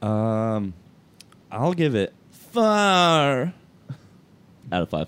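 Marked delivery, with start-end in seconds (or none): 1.5-5.1 high, loud, swooping, out dragged out. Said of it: "I tried to do [name] voice".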